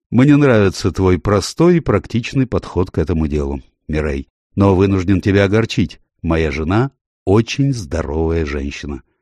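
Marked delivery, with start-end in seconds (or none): none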